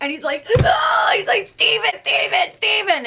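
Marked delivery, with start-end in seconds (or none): 1.5-3.1 play-acted hysterical child, screaming and crying out. Retelling how a hysterical kid called out the speaker's brother's name: imitating a child screaming. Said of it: "And he's screaming my brother's name".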